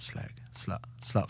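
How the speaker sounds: hushed, whispered, muttered taunting tone. Retelling a brother taunting his sister: imitating someone muttering under breath. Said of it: "calling her a slag under his breath".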